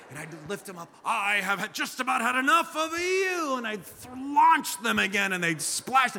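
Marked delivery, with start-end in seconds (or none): 1.0-3.5 mock-angry, much higher and slower. A dad in the pool retells scolding his kids before launching them again, mock-angry. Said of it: "I would pretend I was angry with them".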